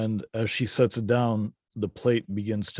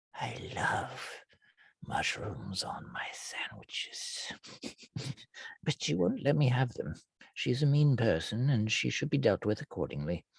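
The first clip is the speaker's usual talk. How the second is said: secretive, in-on-it, confiding tone; 6 dB quieter than usual. Voicing an old man who leans in toward the players: conspiratorial. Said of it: "and almost conspiratorially".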